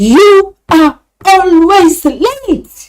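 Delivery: very slow, loud, angry, drawn-out delivery. Teacher to Tom, a student who keeps arriving late, angry tone. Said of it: "What tone have I used? Angry tone".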